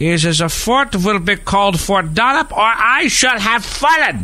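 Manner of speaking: put-on German accent, pitched very high. Quoting a man at the Battle of Fort Mercer: put-on German accent. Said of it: "You like my German accent?".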